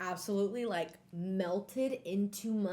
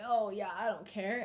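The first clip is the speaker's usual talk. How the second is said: put-on suave, smooth cool-guy voice. Mocking how he acted before a kiss: imitating Sean's suave cool-guy act. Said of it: "this rico, suave, cool guy".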